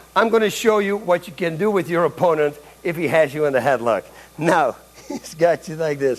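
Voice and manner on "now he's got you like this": talking while cracking up, laughing through the words. Speaker shows how to escape an opponent's headlock, laughing while talking. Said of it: "I'm sorry, I'm laughing".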